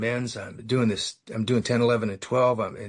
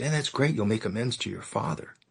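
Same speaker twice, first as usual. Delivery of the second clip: all fired-up, excited, lit-up enthusiasm; 4 dB quieter than usual. Retelling what the sponsor said after lighting up: imitating an excited sponsor. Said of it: "He gets all excited".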